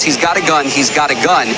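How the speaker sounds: normal talking voice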